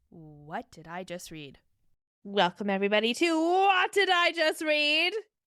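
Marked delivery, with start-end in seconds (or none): 2.2-5.1 effortful, forced high energy, loud, rising pitch. Podcast host opening the show while having no energy, forced high energy. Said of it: "I'm trying to be high energy".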